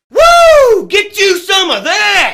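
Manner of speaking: shouting. A professional wrestler finishing a radio station promo, yelling. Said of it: "Why are you yelling at me?".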